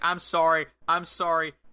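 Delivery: slow, pleading, begging tone. Retelling someone running around the ring away from Victoria: imitating begging for mercy. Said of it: "begging for mercy".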